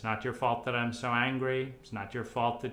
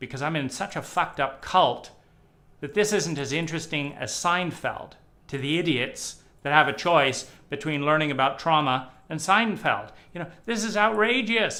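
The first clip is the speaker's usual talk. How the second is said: outraged, loud, furious angry ranting tirade; 4 semitones higher, 8 dB louder than usual. Speaker reacting to a listener's parents still abusing them: furious. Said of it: "I'm even more furious".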